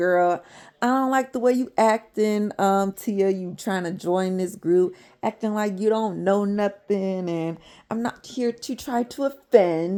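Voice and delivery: upset, heated, sudden, confrontational tone. Retelling a group argument, acting out one member confronting a newcomer, mock-upset. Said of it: "Jazzy just got real upset all of a sudden".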